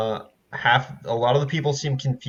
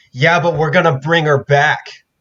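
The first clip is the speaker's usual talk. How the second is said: loud, drawn-out yell; 4 semitones higher, 7 dB louder than usual. Voicing a young half-orc answering the group: yelling back. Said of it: "will look at you and yell back".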